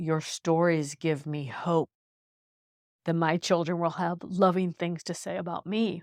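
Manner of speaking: words spoken through tears. Recounting what a woman said to her about her stories, crying. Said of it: "Sorry, I'm crying".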